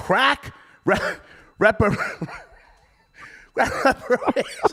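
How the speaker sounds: laughing, slow, stumbling over the word. Repeating the caller's phrase back, laughing while talking. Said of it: "I'm laughing".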